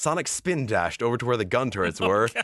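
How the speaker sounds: plain reading voice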